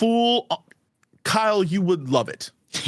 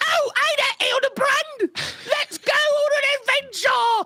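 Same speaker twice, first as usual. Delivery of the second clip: silly character voice, much higher. Co-host shows the voice people get mad about, Nashu voice. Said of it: "my Nashu voice is like".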